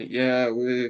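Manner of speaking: normal talking voice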